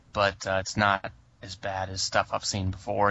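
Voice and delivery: normal talking voice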